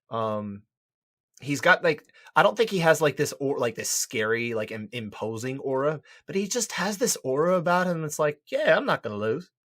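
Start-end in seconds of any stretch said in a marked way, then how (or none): 8.4-9.4 terrible put-on Australian accent, pitched up. Describing a man's aura, voicing his attitude in a terrible Australian accent. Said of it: "terrible Australian accent".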